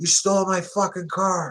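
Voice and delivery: acted screaming. Telling a story about a man with a rifle: retelling someone screaming. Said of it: "And he's screaming".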